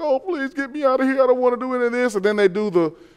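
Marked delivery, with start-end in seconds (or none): 0.0-2.1 acted, high, weepy, sobbing, crying voice. Speaker acting out how they cried on the show, imitating someone crying. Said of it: "they're crying like".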